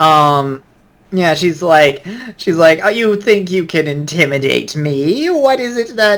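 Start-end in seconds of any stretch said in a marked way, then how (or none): 2.8-6.2 cackling witch voice, pitched up. Acting out what she said while sitting there, in a cackly witch voice. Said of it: "She has a cackly witch's voice".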